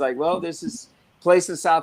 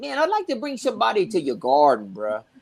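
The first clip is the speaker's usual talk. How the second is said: put-on real thick Cajun accent with swooping pitch; 5 semitones higher than usual. Quoting what a Cajun friend said to him: imitating thick Cajun accent. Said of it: "real Cajun guy, real thick accent".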